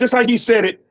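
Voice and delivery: ordinary talk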